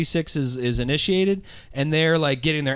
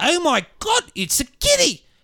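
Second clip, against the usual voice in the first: put-on thick, broad New Zealand accent, very high, slow; 14 semitones higher than usual. Retelling what Omega says all episode: Omega's thick New Zealand accent. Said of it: "the thickest New Zealand accent you've ever fucking heard".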